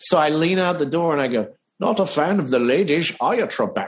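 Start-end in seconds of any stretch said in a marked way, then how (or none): 1.8-3.9 put-on Scottish leading-man film-star accent. Retelling how you leaned out the door at Alex Trebek, do a Sean Connery impression. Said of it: "I'm working on this impression of Sean Connery".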